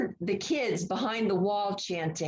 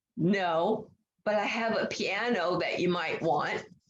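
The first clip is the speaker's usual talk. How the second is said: mock raspy voice, slower; 2 semitones lower than usual. Retelling a father's reply to a nurse through his oxygen mask, imitating a raspy voice. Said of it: "in a raspy voice".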